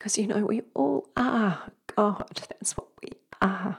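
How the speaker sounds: emotional, close to tears.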